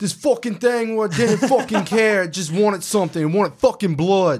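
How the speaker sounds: put-on tough Irish accent. Retelling what she said, the speaker delivers it as a Conor McGregor voice. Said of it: "Conor McGregor".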